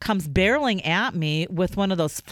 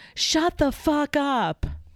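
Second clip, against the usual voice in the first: mock slow, deliberate, high, drawn-out yell; 8 semitones higher than usual. Speaker retells turning around in a store at a man, retelling a yell. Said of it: "just yelled".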